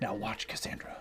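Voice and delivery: hushed quiet whispering. The narrator voicing a man spinning a ring, whispering. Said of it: "He's whispering".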